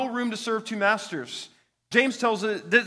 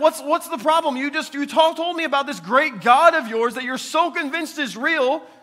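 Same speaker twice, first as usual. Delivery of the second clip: acted-out jeering, needling, taunting tone; 5 semitones higher, 5 dB louder than usual. Retelling how he taunted the others about their god: imitating a mocking taunt. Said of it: "he was mocking them".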